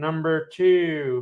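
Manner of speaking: campy villain voice with "two" drawn out. Discussing crypto charts, quipping a line as a Doctor Evil impression. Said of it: "that's my uh, Doctor Evil impression".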